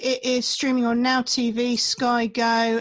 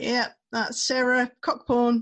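plain

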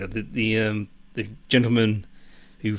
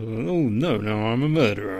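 quiet self-directed mumble. Retelling a film character's reaction after accidentally shooting someone: muttering to himself. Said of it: "he just sort of mutters to himself".

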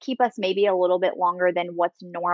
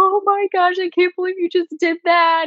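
very high, tearful, bawling sob-talk; 12 semitones higher than usual. Retelling what the crying partner said after the birth: imitating someone bawling. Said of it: "just bawling and was like".

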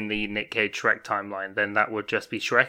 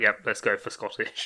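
ordinary talk

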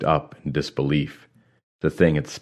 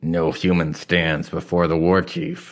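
growling, rising voice; 2 semitones higher than usual. Narrator reading a guard's line to Krell, growled. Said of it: "the guard growled".

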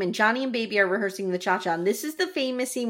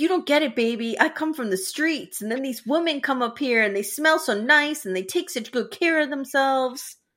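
irritated, acted-out annoyed speech; 4 semitones higher than usual. Retelling a movie scene, acting out Johnny's lines. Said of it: "Let me act this out".

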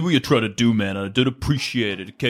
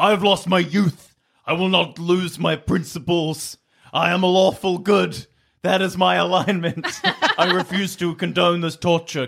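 put-on, pitched-up shouting; 6 semitones higher than usual. Player character in a tabletop game, after knocking off a crown, yelling. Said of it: "I yell".

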